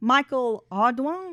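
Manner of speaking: loud, put-on Louisiana accent. Reading out an arrest report, trying a Louisiana accent. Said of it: "trying to use my Louisiana accent".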